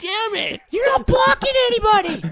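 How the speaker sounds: very high, loud, screeching shriek. Mimic a mic'd-up man screaming on the field about blocking: imitating a high-pitched shrieking scream. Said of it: "I can perfectly mimic the screaming he does".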